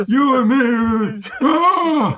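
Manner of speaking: very high, very slow voice. Answering a Rocky IV reference from the other speaker: Rocky impression. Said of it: "Is that your Rocky impression?".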